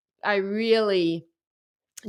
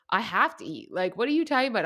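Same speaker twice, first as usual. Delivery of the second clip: normal talking voice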